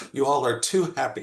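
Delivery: mock scornful, disdainful, dismissive tone. Retelling what a friend from the center said: imitating Lucy's disdain. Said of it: "with disdain".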